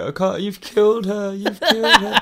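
play-acted, very high, tearful sobbing cry. Retelling a scene where Rachel starts crying: imitating Rachel crying. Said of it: "Rachel just starts crying, like".

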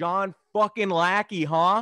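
very loud, high, drawn-out, acted-out jeering. Retelling how a stranger came up behind him in the aisles and taunted him: retelling a taunting heckle. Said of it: "heckler taunting in stadium aisle".

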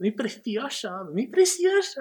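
very high, soft, tiny little voice. Discussing an iconic character, the speaker imitates Gollum's little voice. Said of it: "la vocecita también".

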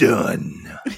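loud, raspy, rasping demonic voice. Recapping a Buffy episode, speaker voices Anya answering Cordelia, raspy demonic Anya voice. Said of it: "In this like raspy voice, demonic voice".

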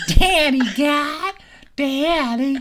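put-on very high, childish five-year-old voice. Demonstrating what not to do, in a five-year-old voice. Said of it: "if you have a 5-year-old voice".

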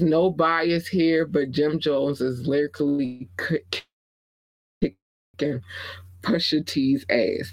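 ordinary delivery

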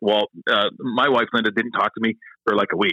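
normal talking voice

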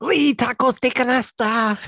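piercing, very loud, shrill, high yell. Explaining who she is, the speaker imitates Lady Tacos de Canasta's shout. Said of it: "but then she shouts out".

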